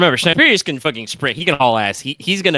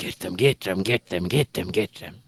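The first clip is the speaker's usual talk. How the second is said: hushed, hissed murmur, words repeated; 6 semitones lower, 8 dB quieter than usual. Voicing a horde of enemies rushing past the hidden player: hissing and murmuring. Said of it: "hissing and murmuring to themselves".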